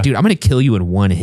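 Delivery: ordinary talk, nothing marked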